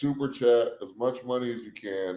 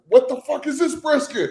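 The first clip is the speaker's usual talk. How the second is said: shrill, very high-pitched, loud yell; 6 dB louder than usual. Pitching a barbecue show, yelling at a cook about his brisket: Gordon Ramsay yelling. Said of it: "Gordon Ramsay him".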